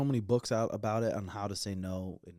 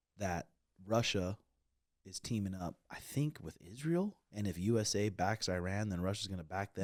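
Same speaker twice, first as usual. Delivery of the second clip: ordinary delivery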